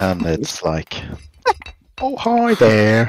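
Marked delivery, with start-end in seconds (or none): 2.0-3.1 loud, high-pitched southern drawl. Describing a stereotypical character from the game Borderlands, imitating a southern drawl. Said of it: "Kind of got a southern drawl going on".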